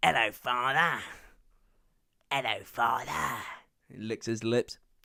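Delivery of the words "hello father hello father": slow, deliberate, drawn-out delivery lingering on each word. Retelling a film scene, imitating David Tennant as Barty Crouch Junior. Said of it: "you hear David Tennant as Barty Crouch Junior, and he's like".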